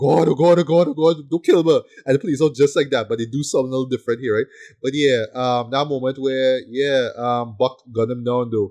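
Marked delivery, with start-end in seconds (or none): 0.0-1.8 high, loud, frantic, panicked, pleading tone. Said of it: "Blake is freaking out".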